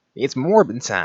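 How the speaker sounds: put-on punchy, emphatic Boston accent. Imagining what Griffin would say, speaker voices him in a Boston accent. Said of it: "He would actually in his fucking Boston accent".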